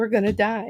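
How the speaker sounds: quiet, hushed murmur, almost under the breath. Retelling a passenger's words while cutting through traffic: imitating Tim speaking quietly. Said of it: "Tim quietly going".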